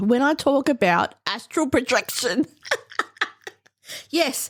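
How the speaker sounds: talking through laughter. Introducing the topic of astral projection, laughing while talking. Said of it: "I don't know why I'm laughing".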